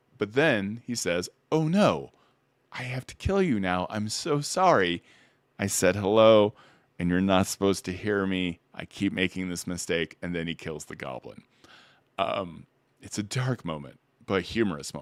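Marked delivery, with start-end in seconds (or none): 1.5-10.2 earnest, innocent, polite tone. Acting out a construct who apologizes before killing a goblin: polite innocent construct Ren voice. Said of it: "very literal and very polite and innocent".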